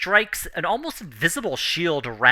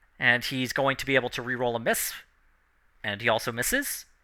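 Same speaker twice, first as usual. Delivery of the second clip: plain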